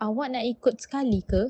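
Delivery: polite tone with pitch rising on ke. Demonstrating Malay intonation for a polite question: rising pitch, asking politely. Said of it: "uses rising pitch to ask politely".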